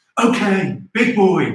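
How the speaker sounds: angry, cranky, condescending chef-like voice. Asked to try one, attempting a Gordon Ramsay impression. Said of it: "I wonder if I can do one".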